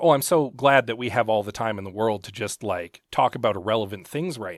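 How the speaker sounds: ordinary talk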